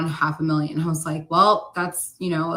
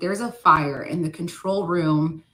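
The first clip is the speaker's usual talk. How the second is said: normal talking voice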